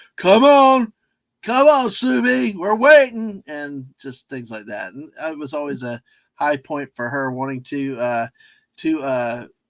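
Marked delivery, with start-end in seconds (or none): 0.2-3.4 raised, high, loud hollering yell. Retelling a family trip to Universal: imitating the Grinch yelling. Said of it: "The Grinch is yelling, yelling at her".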